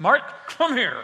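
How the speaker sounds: mock angry, through clenched teeth. Recalling the father calling the speaker over, imitating father through gritted teeth. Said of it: "it always ended up with gritted teeth, and it sounded like this".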